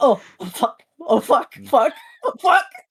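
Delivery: very high, loud, effortful strained voice. Voicing a character tugging on a hammer stuck in the ground: straining while tugging, in character. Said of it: "they are tugging on it like".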